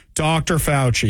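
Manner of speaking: ordinary delivery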